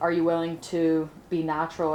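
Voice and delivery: ordinary talk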